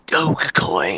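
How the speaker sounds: ghastly, ghoulish, spooky ghost-story tone. Game master voicing a crypto-obsessed monster as it leans forward, in a ghastly voice. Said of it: "in a ghastly voice says".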